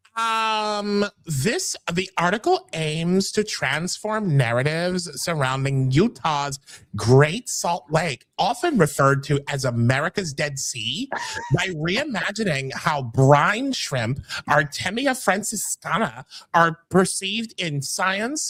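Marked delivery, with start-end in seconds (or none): 1.3-18.5 put-on California girl accent.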